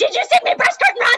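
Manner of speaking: shrill, loud, full-out campy outburst. Imagining Jack flouncing into Will's apartment, Jack impression. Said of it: "That was my best Jack impression".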